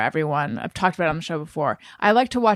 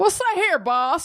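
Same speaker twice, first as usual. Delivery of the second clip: put-on very high-pitched, old-movie transatlantic talkie accent; 11 semitones higher than usual. Joking about old audio versus modern mixing: transatlantic talkie impression. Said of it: "my transatlantic talkie impression".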